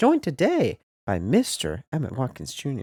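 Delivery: surprised, swooping tone. A podcast host introduces his co-host by full name, with raised pitch. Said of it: "the octave raising here today".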